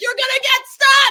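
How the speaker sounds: high, shrill, full-volume screaming yell. Retelling watching a scene and warning a character: retelling own scream. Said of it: "screaming at him".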